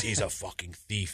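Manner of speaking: put-on Mexican accent for show. Retelling what a boxing trainer said about a man he hates, in a Mexican accent. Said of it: "but he says it in a Mexican accent".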